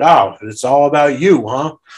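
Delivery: cross, angry, cutting scolding tone. Retelling a haunted house actor scolding for walking slowly: imitating someone angry. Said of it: "She got mad at me".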